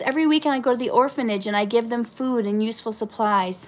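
ordinary talk

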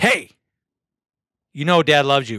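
mean-toned, angry dad voice. Dad shows how he tells his kids he loves them: saying I love you meanly. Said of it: "I say I love you in a mean way".

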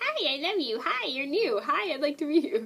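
high, happy, friendly puppy voice. Showing what the friendly dog says to new people: voicing Gabby the dog. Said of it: "She goes".

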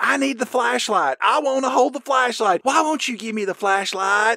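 whiny, passive-aggressive, high-pitched.

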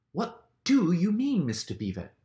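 very high voice, panting and out of breath. Peter, scrambling up a steep bank, asks mr. beaver, panting. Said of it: "panted Peter".

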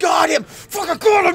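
high loud triumphant yell.

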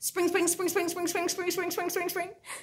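extremely fast. Leading a clapping rhyme, repeating one word as fast as possible. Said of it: "Let's say spring as fast as we can".

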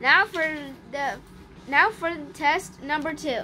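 plain

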